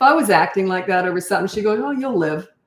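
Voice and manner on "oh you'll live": mock offhand, dismissive tone, waving it off. Imitating a mother brushing off a fussing child: imitating mother's dismissive tone. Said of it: "That's my mother's tone".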